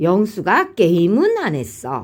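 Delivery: strong stress on the word 게임은. Explaining how a particle and stress resolve ambiguity: stress on '게임은'. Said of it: "보조사 은을 사용해서... 그 다음 강세도요. ... 이런 식으로 강세를 주면".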